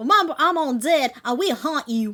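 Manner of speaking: put-on loud, sassy Texan accent. Playing a game, the speaker repeats a character's line in a Texan accent. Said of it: "Would that be a Texan accent?".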